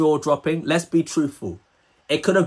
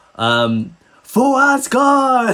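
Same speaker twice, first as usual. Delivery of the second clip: mock scream, much higher, louder; 8 semitones higher, 4 dB louder than usual. Recalling the Thor cartoons, the speaker imitates Thor's scream. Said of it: "He would always scream out".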